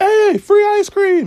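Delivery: high, loud, slow yelling.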